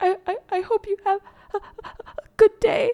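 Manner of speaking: play-acted very high, choked-up, tearful stuttering. Retelling crying and being unable to explain it, imitating a crying stammer. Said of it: "when you're crying and you can't speak".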